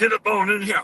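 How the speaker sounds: big, authoritative, commanding voice. Retelling showing a friend at an event how to use the big voice. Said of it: "you gotta use the big voice".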